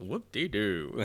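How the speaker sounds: mock enticing teasing delivery. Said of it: "I like the way he said that".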